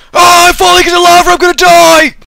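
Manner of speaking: very high fake panic. Showing how someone trapped on a ceiling would sound: mock terrified panic. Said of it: "it would probably sound a little bit like this".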